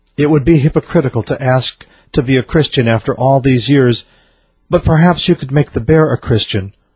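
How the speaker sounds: ordinary talk, nothing marked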